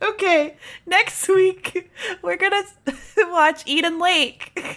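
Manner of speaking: can't stop giggling. Host announcing next week's film pick, can't stop giggling. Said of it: "Now I can't stop giggling".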